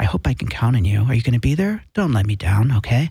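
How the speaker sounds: very low, sultry, seductive voice. Host inviting viewers to his Tuesday night show, in a sexy voice. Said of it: "This is my sexy voice".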